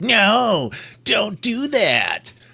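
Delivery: acted-out, very high, very slow, drawn-out yell. Retelling how someone yelled on the phone: imitating someone yelling. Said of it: "he's yelling at me".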